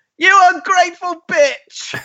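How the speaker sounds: very high, shrill, screeched scream. Describing how he reacts when unappreciated, the speaker acts it out: retelling a scream. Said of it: "he just screams".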